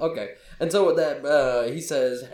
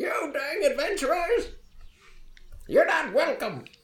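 put-on high, cranky, crotchety old man yelling; 12 semitones higher than usual. Game master voicing an old man who runs out at the adventurers: crotchety old man yelling. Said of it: "he yells out".

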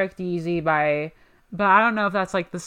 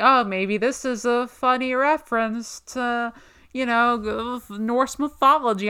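slow, dorky, put-on nerd voice; 5 semitones higher than usual. Imitating the other speaker's earlier take, in a nerd voice. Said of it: "I'm doing a nerd voice".

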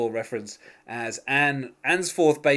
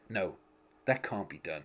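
mock grave, low, hushed, dead-serious tone; 6 semitones lower, 9 dB quieter than usual. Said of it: "Job goes so serious when he goes".

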